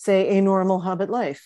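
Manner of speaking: usual speaking voice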